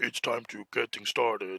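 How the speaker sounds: big monster puppet character voice. Retelling greeting a coworker: big Muppet monster voice. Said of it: "with a Muppet kind of voice, like the big monsters".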